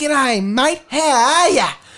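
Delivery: very slow, dragged-out, high slowed-playback voice. Imitating how a voice sounds on a recording: imitating own recorded voice. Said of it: "you hear a recording and it's like".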